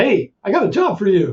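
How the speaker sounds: put-on New York accent. Retelling what an advisor said coming down the hall; New York accent. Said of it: "he says with his New York uh, accent".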